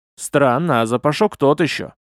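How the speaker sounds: usual speaking voice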